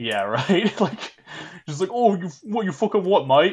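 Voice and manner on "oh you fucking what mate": thick Cockney accent, much higher. Imagining a fight with a man named Humphrey or Rodolph, in a thick cockney accent. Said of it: "the fucking most cockney accents".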